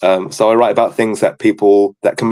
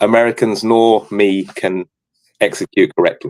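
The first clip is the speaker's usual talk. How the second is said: plain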